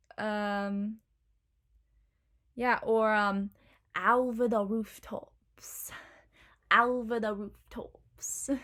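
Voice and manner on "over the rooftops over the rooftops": slow, deliberate Cockney accent, overdone ow vowel. Teaching the basics of an accent with example phrases: Cockney accent. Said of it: "our basics for a Cockney accent".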